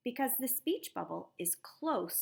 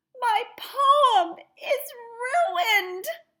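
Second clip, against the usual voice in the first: very high, very loud crying wail; 15 dB louder than usual. Reading a story aloud, voicing a character's line in a wailing voice. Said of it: "need to use a voice that sounds like wailing".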